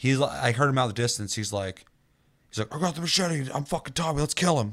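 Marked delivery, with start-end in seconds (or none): 2.7-4.7 put-on, pitched-up, eager, enthusiastic hype. Retelling a new player's words in his second match: imitating an enthusiastic player. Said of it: "And he was so enthusiastic".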